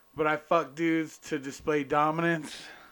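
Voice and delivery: ordinary talk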